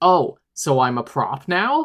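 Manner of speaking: cutting, convincing, slow tone with swooping pitch. Retelling a scene where a character answers her boyfriend: imitating Mary's cutting tone. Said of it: "such a cutting and convincing way".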